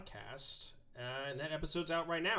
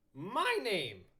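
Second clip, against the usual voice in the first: voice breaking and cracking; 7 semitones higher, 5 dB louder than usual. Host introducing himself at the start of the show, voice cracking. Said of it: "my voice cracked".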